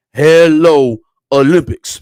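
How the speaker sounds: very loud, bad, goofy, dumb put-on voice. Imitating how Master Teague wrote his tweet: dumb Master Teague impression. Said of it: "your dumb impression of Master Teague".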